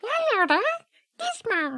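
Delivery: small, sweet put-on voice. Describing how Gizmo starts talking in the film: cute little Gizmo voice. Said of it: "with that little cute".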